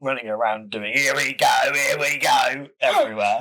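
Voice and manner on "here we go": put-on cartoon orc voice. Talking about orcs, doing the cartoony orc catchphrase in an orc voice. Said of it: "I knew you were going to do that bloody voice again".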